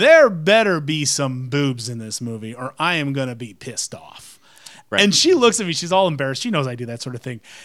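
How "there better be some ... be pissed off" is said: slow, full-voiced, loud delivery. Retelling a remark to one's wife while waiting at a movie theater: speaking in full voice. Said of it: "I say in full voice".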